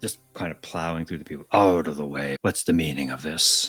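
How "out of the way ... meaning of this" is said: rough, gruff, harsh voice. The foreman plows through the crowd, pushing people aside: gruff voice. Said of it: "and a gruff voice saying".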